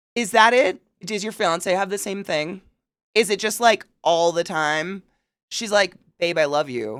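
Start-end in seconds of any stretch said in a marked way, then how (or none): 6.2-7.0 sincere, sweet delivery. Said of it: "is this sarcasm?".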